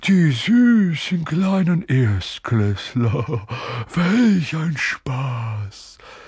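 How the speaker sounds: very slow, high, spiteful ghost voice drawl.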